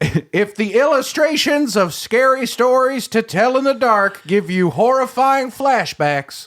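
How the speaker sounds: very high-pitched, slow, drawling Southern accent. Telling a joke in Jeff Foxworthy style: Southern accent.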